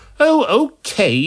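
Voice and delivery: very high, put-out, huffy delivery. Alice gives in after the doctor calls her name, huffing. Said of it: "she huffed".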